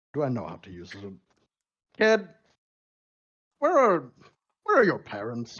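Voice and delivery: cocky, swooping, chuckling to himself. Narrator voicing a character answering a kid who asked about his sword, chuckling to himself. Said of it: "he kind of chuckles a bit to himself".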